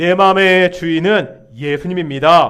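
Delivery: loud, ringing, proclaimed delivery. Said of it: "한번 이렇게 고백할까요".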